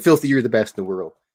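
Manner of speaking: plain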